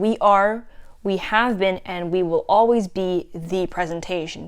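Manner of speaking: ordinary talk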